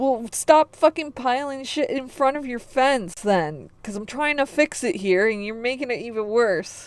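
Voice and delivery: mock high-pitched yelling. Retelling yelling at neighbours over a fence: retelling own yelling. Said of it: "I was yelling at them also".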